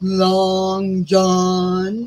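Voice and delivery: seductive voice, name stretched and drawn out long. Retelling a line from a movie, imitating Miss Piggy's seductive voice. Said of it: "in a real seductive way".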